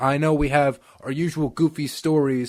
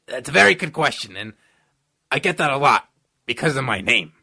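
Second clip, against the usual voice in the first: put-on New York accent. Answering a listener's question as Fauci; Fauci impression, New York accent. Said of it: "He has a very strong New York accent".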